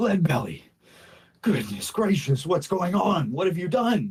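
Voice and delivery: high, winded, panting, out-of-breath voice. Voicing a character who just sprinted up, out of breath. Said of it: "he's a bit out of breath from that sprint".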